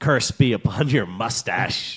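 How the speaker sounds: low put-on pirate accent, old-salt style. Quoting a traditional insult while reading about mustaches: pirate accent. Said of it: "I gave him kind of a pirate accent".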